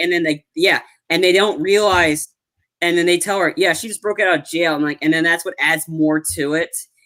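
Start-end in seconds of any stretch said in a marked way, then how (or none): none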